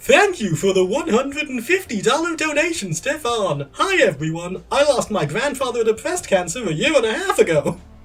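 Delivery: loud, sing-song announcing delivery. Retelling a donation read during a game run: Battle Block Theatre announcer voice. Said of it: "in the voice of the Battle Block Theatre announcer".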